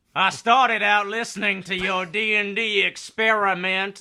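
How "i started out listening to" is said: usual speaking voice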